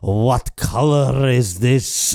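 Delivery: failed, very slow, bad Scottish accent attempt. Imitating a Scottish wedding guest asking about a dress: bad Scottish accent attempt. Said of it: "attempt a Scottish accent".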